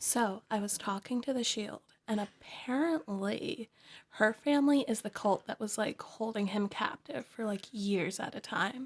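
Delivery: hushed voice. Voicing a character who passes on what she heard: whispering. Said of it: "she's whispering this whole thing".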